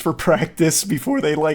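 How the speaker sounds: voice breaking and cracking in the middle of the phrase. Recounting staying late at a card game store to practice: voice cracking. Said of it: "huge voice crack".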